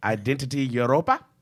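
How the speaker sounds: odd fake South African accent. Asked to say it again, repeating the quoted name in a put-on south african accent. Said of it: "That's your South African".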